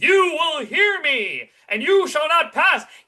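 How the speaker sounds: very high, swooping, carrying shout. Showing how the actor does not talk: imitating shouting across a room. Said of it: "shouting across the room".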